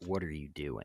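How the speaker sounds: disappointed, dismayed, let-down tone. Retelling his girlfriend's reaction to his comics: imitating a disappointed girlfriend. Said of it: "so disappointed".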